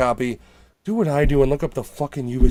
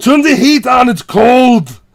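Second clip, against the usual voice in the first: put-on loud, barked delivery in an Austrian accent; 11 semitones higher, 11 dB louder than usual. Describing his house set up with Alexa, the speaker orders it around in Schwarzenegger Austrian accent. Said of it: "can't pick up his Austrian accent".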